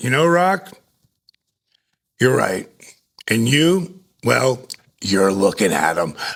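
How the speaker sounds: acted-out, bone-dry, matter-of-fact deadpan delivery. Retelling a comeback to a wrestler, imitating own deadpan delivery. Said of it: "I just deadpanned him".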